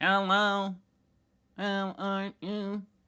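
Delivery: put-on very high, very slow, flat old robot monotone. Showing what old robots sounded like: old school robot voice. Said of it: "the old school robot voice".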